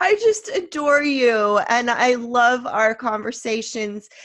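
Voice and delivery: choked up, near tears. Telling the other speaker how much they adore their conversations, tearful, about to cry. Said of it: "I'm gonna cry again".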